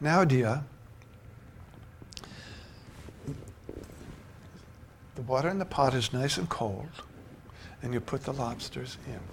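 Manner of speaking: put-on whispered, hushed, breathy, slow Maine accent. Retelling an aunt explaining to a young child how to cook lobster, Aunt Eleanor's Maine accent. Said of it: "in that main accent of hers".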